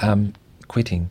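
ordinary talk

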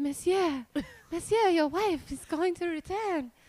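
high, put-on French maid voice. Retelling a lingerie alter ego plan: Bianca French maid voice. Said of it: "And she's a French maid".

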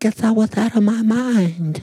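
put-on very high, sugary childlike voice. Quoting her answer into the microphones about why she did it, in a childlike, sugary sweet voice. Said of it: "Say it like she said it".

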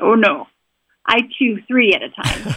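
mock deep voice of a huge man. Retelling what a big guy he worked with said when offered gum: imitating his loud, deep voice. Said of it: "he's in his loud, deep voice".

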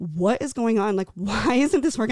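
mock distraught, hysterical, tearful crying despair. Retelling a phone call to her dad after a rejection: retelling her own hysterical crying. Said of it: "calling him so hysterical in tears".

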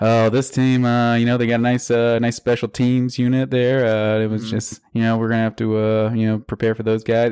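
put-on boring monotone. Mimicking a coach's dull press conferences, imitating boring monotone press conference. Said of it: "the most boring, monotone press conferences ever".

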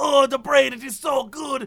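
put-on savoring, drawn-out old Italian gentleman voice. Retelling a video of an old italian man eating goat head: imitating an old italian man. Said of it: "He's like".

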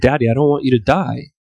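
put-on play-acted small tearful child voice, welling up. Retelling a story, quoting a young daughter's words: imitating a crying child. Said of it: "crying, like, her eyes were all welled up".

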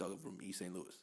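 very quiet, low, steady droning voice. Imitating how he talks to the press and media, imitating his low voice. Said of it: "that low voice that he just consistently talks through".

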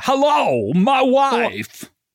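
very high-pitched character voice. Doing a Christopher Walken impression for the other speaker. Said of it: "the Christopher Walken impression".

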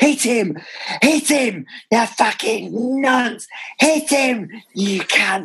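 very high, drawn-out, carrying shout. Retelling how a loud fan at corners always yelled: imitating a fan shouting. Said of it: "He would always shout".

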